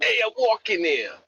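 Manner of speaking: put-on New York accent, pitched way up high. Showing how people in the city speak: New York City accent. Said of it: "It's only really the city that's proper".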